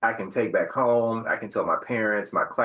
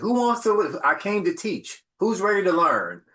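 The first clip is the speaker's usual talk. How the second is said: mock sarcastic taunting tone, higher pitch; 10 semitones higher than usual. Retelling challenging students to a game of spades: retelling sarcastic trash talk. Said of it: "I'm a professional, sarcastic person".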